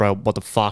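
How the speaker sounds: put-on panicked voice. Retelling a failed practice before a gig, retelling his own panic. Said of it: "I'm panicking at this point now".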